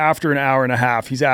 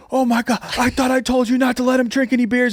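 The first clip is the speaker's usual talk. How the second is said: mock reproachful telling-off, shouted high as a scolding yell; 11 semitones higher than usual. Retelling how the lady who checked them in yelled at them, retelling a yell. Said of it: "And she's like yelling at me".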